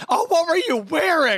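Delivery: very high, shrill, impatient blurted outburst. Speaker retelling his grandma cutting off a meandering story: imitating grandma's impatient outburst. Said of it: "she just burst out".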